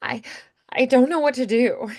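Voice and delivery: wobbly, cracking voice. Giving voiceover advice and demonstrating, with a wobbly, cracking voice. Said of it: "or wobble a little bit".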